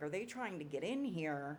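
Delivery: ordinary delivery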